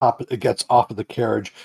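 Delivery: ordinary delivery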